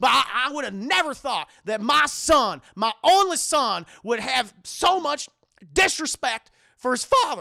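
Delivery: furious, very loud cartoon-dad rant. Retelling a road trip scene, speaking as Goofy to Max: angry Goofy impression. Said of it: "So yeah, I'm fucking pissed".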